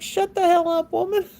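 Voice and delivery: very high, sassy dog voice, scolding tone. Voicing what the dog's look says to its owner: voicing the dog telling her off. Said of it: "he's looking at me like".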